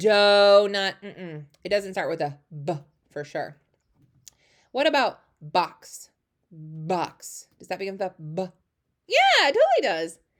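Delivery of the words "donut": very slow drawn-out word, louder. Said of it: "I do it in slow-mo sometimes".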